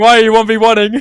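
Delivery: acted tense, stressed voice. Casting a match, retelling a player's panic: imitating stressed Yumiko. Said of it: "You can see the stress on Yumiko. She's like".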